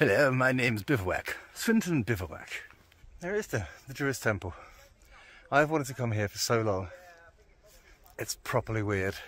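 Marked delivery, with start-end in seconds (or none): 0.0-2.5 put-on upper-class posh gentleman's voice. Imagining the place name swinton bivouac as a person, in a posh man voice. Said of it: "sounds like a posh man".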